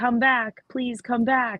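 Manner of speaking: slow, drawn-out pleading tone. Suggesting a plea to make someone return: pleading like Rose from Titanic. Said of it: "like Rose did with Jack on the Titanic".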